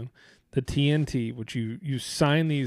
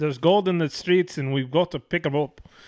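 attempted put-on Irish accent. Quoting an old saying about gold in the streets: attempted irish accent. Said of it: "I don't know how to say it in an Irish accent".

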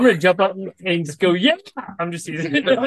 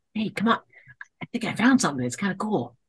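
very dull, hushed, barely voiced whisper; 6 dB quieter than usual. Sneaking up close to another character in a game: very dull whisper. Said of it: "in a very dull whisper".

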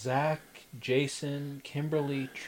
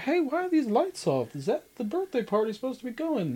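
bad, very high sing-song voice, pitch swinging wildly; 11 semitones higher, 7 dB louder than usual. Retelling a scene where Zach walks into a dark room: bad Zach impression. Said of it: "That was a real bad impression that I did".

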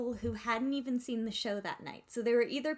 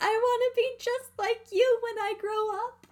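very high, loud shrieking scream; 12 semitones higher, 7 dB louder than usual. Speaker retells screaming at a woman signing her program, re-enacting the scream. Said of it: "I just kind of screamed at her".

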